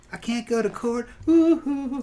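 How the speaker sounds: very high, very slow, drawn-out gasps for air. Imitating Michael's excuse of bruising his lung: imitating Michael gasping for breath. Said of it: "I couldn't breathe like this".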